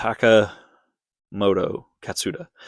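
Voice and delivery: very slow and drawn out. Rally commentator names a driver, saying it very slow. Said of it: "I had to say it really, really slow".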